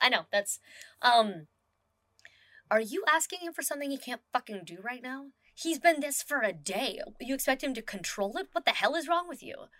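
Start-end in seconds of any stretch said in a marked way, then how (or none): 2.7-9.5 furious yelling under the breath, hushed, pitched up. Voicing a character scolding another while changing clothes: yelling quietly. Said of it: "she's yelling at him. Um, but quietly".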